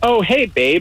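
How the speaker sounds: put-on breezy, offhand tone, as if nothing happened. Retelling how she greeted him at the bar: imitating a casual offhand greeting. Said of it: "like it was nothing".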